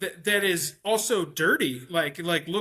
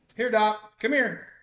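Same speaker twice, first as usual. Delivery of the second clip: calling out in a projected voice; 3 semitones higher than usual. Calling a dog over while at the microphone: yelling. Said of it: "Sorry for if I'm yelling in the microphone".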